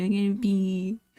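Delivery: mock tearful, crying, sob-broken voice. Retelling a game character's complaint, imitating a character crying. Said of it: "crying and sobbing".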